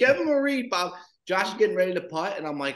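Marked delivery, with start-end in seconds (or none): 0.0-0.9 put-on, very high-pitched scream. Retelling a man on FaceTime shouting advice during a putt, retelling a scream. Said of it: "He's screaming".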